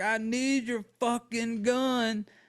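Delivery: put-on unhinged, hysterical cry, high and slow. Retelling a frantic scene, acting out a girl demanding something from her father, as hysterical screaming. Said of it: "She's like yelling like".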